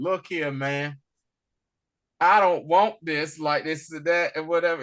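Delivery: ordinary talk, nothing marked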